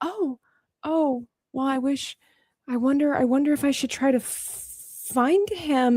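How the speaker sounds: high, soft, wistful, grieving voice.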